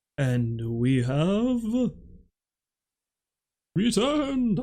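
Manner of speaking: very slow, swooping, eerie ghost-story voice. Announcing to viewers that the show is back, in a spooky voice. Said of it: "that not at all spooky voice".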